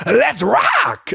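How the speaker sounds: very high, creaky, raspy, squeezed-up voice.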